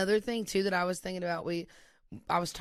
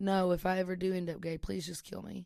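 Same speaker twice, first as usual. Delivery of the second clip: put-on tearful crying child voice. Retelling a brother's words from childhood: imitating a crying child. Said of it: "is crying, saying".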